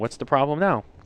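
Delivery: ordinary delivery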